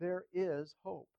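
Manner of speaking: slow, with the word IS leaned on. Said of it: "With, with the emphasis on is".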